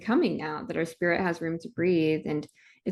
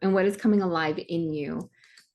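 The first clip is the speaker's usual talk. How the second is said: ordinary talk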